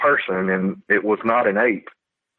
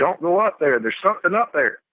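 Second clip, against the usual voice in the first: mock, high-pitched screamed voice; 8 semitones higher than usual. Retelling screaming again to their mom after she didn't hear, retelling a scream. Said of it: "and I screamed".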